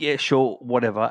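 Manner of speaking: normal talking voice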